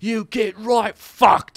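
very shrill, very high, roaring, drawn-out Cockney yell. Describing a crowned, helmeted man smashing everything, speaker voices him: imitating a Cockney yell. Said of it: "yelling in his Cockney accent".

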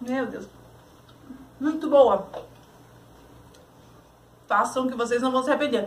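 talking with mouth full. A cook tastes the dish on camera, talking to viewers with mouth full. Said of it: "tá falando de boca cheia".

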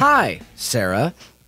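level, mechanical, robot-like voice. Greeting the hosts on a live show: robotic greeting. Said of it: "that was very robotic of you".

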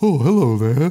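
very proper, formal, correct delivery. Retelling how the worm monster greets people: imitating Aylmer's proper voice. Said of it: "He's, he's so proper".

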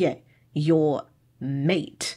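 mocking, dismissive, heavily sarcastic tone. Retelling a character's reply about the word mate: imitating a sarcastic tone. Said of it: "he gets really sarcastic about the fact".

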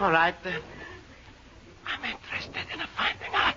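overly hushed, too quiet speech. Told to lower the voice where people are reading, too quiet. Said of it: "Too low".

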